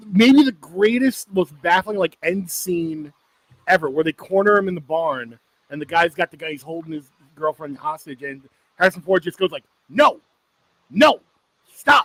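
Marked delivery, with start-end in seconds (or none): 9.9-12.0 stern, scolding, raised high voice. Acting out a film's hostage scene in a barn, imitating someone talking to his dog. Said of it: "he's talking to his dog".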